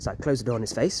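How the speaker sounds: plain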